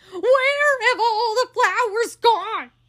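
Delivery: very high, loud shouted outcry. Eugenia, gone around front to admire the effect, calls to her sister Baby, shouting. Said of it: "Shouted Eugenia".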